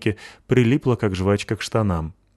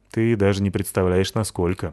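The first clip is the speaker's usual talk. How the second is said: plain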